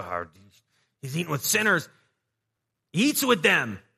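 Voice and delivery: play-acted, loud, swooping, tut-tutting grumble. Acting out the Pharisees' complaint: imitating the Pharisees grumbling. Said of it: "however they grumbled".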